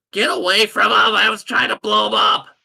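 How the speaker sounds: shouting in a put-on character voice. Voicing Alex in a fight, shouting at another character: shouting in character. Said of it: "Alex is gonna shout".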